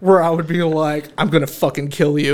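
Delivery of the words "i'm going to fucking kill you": put-on menacing, threatening tone. Retelling what a woman said the speaker did while out of it: mock Gollum threat. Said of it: "doing like a Gollum Schmeagol thing".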